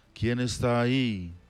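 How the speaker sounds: plain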